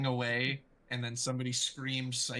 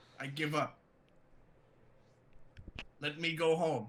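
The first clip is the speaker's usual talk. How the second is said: goblin voice, breathing heavily, shaking; 4 semitones higher than usual. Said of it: "The goblin is breathing very heavily".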